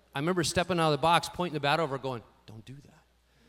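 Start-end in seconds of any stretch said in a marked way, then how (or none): 2.5-3.1 very quiet, hushed voice with anger underneath. Retelling pointing the bat at a parent in the stands: retelling an angry warning. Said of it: "Now I'm getting mad".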